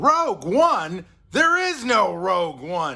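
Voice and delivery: high, booming, drawn-out loud slow call. Quoting a director's off-screen line as a great performance: imitating Tony Gilroy's delivery. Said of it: "his off-screen delivery of".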